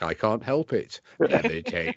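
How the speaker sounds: put-on robotic voice. Speaker does a bit as a Dalek: Dalek voice. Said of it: "I'm a Dalek".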